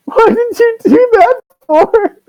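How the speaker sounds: very high, slow, tearful sobbing wail. Voicing a satyr who starts to cry after being hit: crying satyr. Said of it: "and then he starts to cry".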